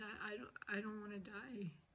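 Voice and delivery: choked-up emotional voice. Retelling what was said to the doctor, retelling a choked-up plea. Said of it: "I got a little emotional and choked up".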